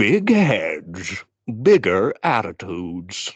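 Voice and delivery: narrating voice with big swooping pitch. Reading a tagline, like the Grinch narrator. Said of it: "like, the Grinch narrator?".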